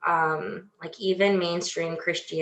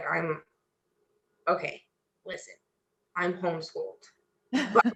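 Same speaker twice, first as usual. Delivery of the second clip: put-on under-the-breath mutter, quieter; 5 dB quieter than usual. Retelling telling people about being homeschooled: imitating saying it under breath. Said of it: "kind of under my breath and be like".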